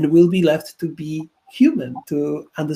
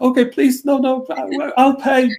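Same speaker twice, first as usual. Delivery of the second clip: acted playful fear, stammering, pitched up; 9 semitones higher, 4 dB louder than usual. Retelling a reply to a self-checkout machine shouting commands: mock frightened pleading. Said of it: "joking at it".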